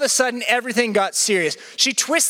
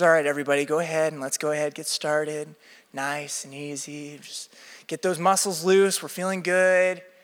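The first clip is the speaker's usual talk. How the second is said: deep, very low, gentle, calm soothing voice; 8 semitones lower, 5 dB quieter than usual. Retelling how the instructor started the class, imitating a calming voice. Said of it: "she actually starts in kind of like a calming voice".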